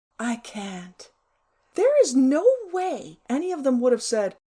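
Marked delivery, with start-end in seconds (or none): 0.2-1.1 put-on breezy, sophisticated tone. Imagining declining one of the girls' invitations: mock-breezy sophisticated voice. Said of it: "in my most breezy, sophisticated voice".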